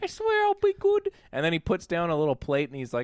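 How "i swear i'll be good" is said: light Cockney lilt in a very high voice. Recounting a scene where he talks to Jessica, in a little Cockney accent. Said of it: "talking with a little like Cockney accent".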